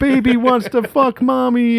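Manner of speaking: put-on unhinged villain voice. Quoting a villain's line from a film: crazed Dennis Hopper impression. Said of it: "He's all like".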